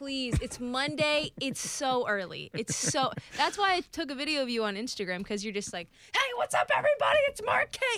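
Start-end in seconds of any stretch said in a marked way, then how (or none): 6.1-8.0 mock, very high, screamy, hyped-up voice. Teasing him about a video they took of him, imitating Mark Kaye screaming. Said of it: "You're like screaming".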